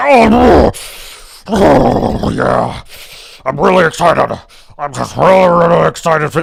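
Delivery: slow, rough, furious-sounding excitement. Mocking excited commentators who sound angry: imitating angry roid-rage excitement. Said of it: "Why do they sound like they're roid raging?".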